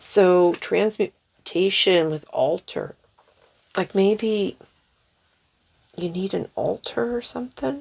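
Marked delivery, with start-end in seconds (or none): 3.8-7.8 hiccuping, higher and quieter. Speaker interprets an altar symbol in an oracle reading, hiccuping. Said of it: "I get the hiccups".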